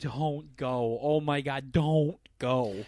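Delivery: very slow, drawn-out pleading, begging voice. Retelling family members begging the speaker not to go: imitating family begging. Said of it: "all of 'em are begging me".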